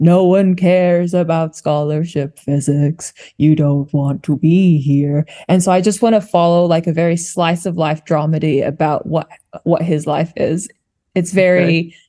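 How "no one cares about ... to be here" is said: glum, sad, beaten-down, defeated voice. Describing an old physics teacher, imitating Mr. Swan's sad voice. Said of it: "talked in such a sad, defeated voice".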